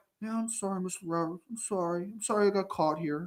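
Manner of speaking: grudging, soft mumble under the breath. Acting out a twelve-year-old apologizing to him, imitating a mumbled apology. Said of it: "Do not mumble under your breath".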